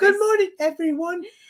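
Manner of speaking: put-on very high, small and young little-boy voice. Greeting everyone on air, a speaker uses his best Tiny Tim voice. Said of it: "in his best Tiny Tim voice".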